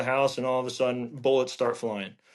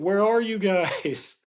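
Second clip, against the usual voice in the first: long, high, drawn-out hollering yell; 7 semitones higher than usual. Retelling how a buddy yelled from the wrong house: imitating a buddy yelling. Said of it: "him start yelling".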